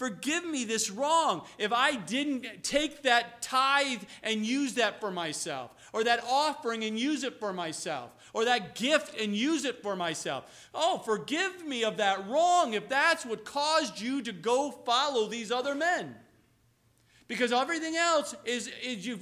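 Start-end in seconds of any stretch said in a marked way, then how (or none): none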